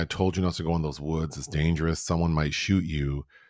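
ordinary delivery

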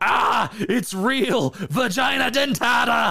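play-acted very high, stretched-out, drawn-out scream. Retelling a scene from a B movie: imitating a guy screaming. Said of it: "you have a guy just screaming".

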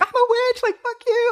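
very high, overjoyed, excited blurted outburst. Recounting hearing her show got picked up, retelling excited outburst. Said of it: "I said crazy things because I was so excited".

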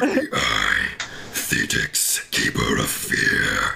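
rough, creaky, rasping sea-monster voice. Resuming a character's self-introduction during a game, in the Thetix Kraken voice. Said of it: "I forgot I was doing the Kraken voice for this one".

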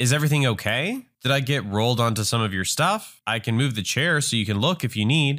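plain reading voice

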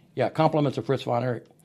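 ordinary delivery

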